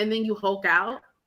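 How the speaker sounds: normal talking voice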